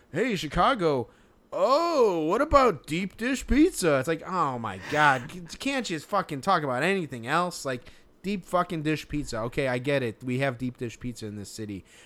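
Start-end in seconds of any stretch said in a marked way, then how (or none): 0.1-4.0 very high, drawn-out, fawning, pandering sportscaster patter. Mocking lazy ESPN broadcast observations: mocking pandering ESPN announcer. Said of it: "just stupid pandering".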